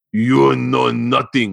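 heavily broken, halting English. Retelling what a woman said to him: imitating broken english. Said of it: "she said in the most broken English".

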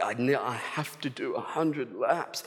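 put-on groaning. Retelling a runner on her 96th lap of 100, the speaker is imitating her groaning. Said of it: "she was sort of just like groaning".

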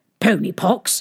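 plain reading voice

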